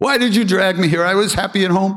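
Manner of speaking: very high yelling. Retelling a devotee yelling at his guru across the courtyard: imitating someone yelling. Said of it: "he starts yelling at Maharaji".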